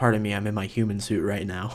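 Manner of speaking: plain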